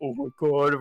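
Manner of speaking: mock, put-on stifled laughter. Retelling their reaction while an old man lectured them, retelling stifled laughter. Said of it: "trying to contain our laughter".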